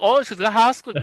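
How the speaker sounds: imitated thick Scottish accent. Imitating an imagined scottish woman talking: imitating thick scottish accent. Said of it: "indecipherable fucking accent".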